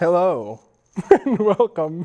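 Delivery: very loud, cracking up, laughing through the words. Opening the episode while laughing: laughing while talking. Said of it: "I can't do an intro without laughing".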